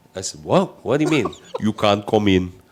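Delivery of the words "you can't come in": put-on foreign accent, sounding a little Austrian. Retelling what the official checking the passport said, in an accent sounding a little Austrian. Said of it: "I know I sound a little Austrian now".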